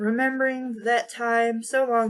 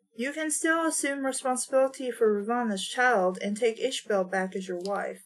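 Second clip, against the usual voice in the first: plain reading voice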